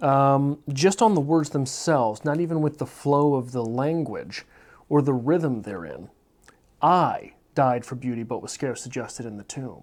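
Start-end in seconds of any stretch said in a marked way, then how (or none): 6.8-9.8 strong stress on the word I. Reading a line to show emphasis on single words: stress on I. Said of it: "Emphasis on I".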